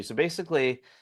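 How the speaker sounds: usual speaking voice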